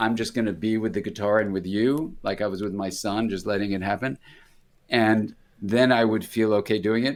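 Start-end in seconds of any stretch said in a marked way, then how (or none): none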